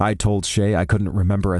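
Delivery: ordinary delivery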